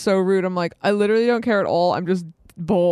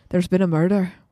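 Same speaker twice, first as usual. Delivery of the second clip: Irish accent, put on; 2 semitones lower than usual. Showing the only line they can say in an irish accent: irish accent.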